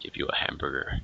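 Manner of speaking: mock creepy stranger voice. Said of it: "It's kinda creepy".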